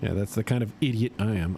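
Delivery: ordinary talk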